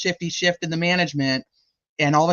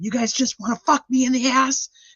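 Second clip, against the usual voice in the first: furious, pitched-up angry outburst; 9 semitones higher than usual. Retelling how an angry district manager yelled at the managers: imitating a furious manager. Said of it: "He was so mad that he was like".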